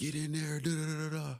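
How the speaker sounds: very high, barked drill sergeant yell. Retelling arriving at training as drill sergeants started yelling: imitating drill sergeants yelling. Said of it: "They started yelling at us".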